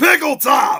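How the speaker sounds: shout. Doing a yell on request for the others: yell. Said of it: "please do your, your yell there".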